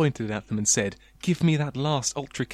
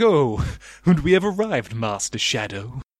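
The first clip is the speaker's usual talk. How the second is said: posh, plummy English accent; 3 dB louder than usual. Imagining what the car might suddenly say, in a plummy English accent. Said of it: "say something in a plummy English accent. It's like".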